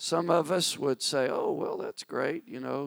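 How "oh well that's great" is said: very high, cool, calm and collected voice. Speaker imagines how someone might react to winning, acting cool and calm. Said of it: "cool, calm, and collected".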